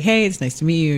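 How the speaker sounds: ordinary talk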